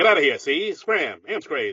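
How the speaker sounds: put-on old-timey, forties-radio-style mid-Atlantic accent. Showing the accent radio people had in the forties, old-timey mid-atlantic accent. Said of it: "a good impression of that mid-Atlantic accent".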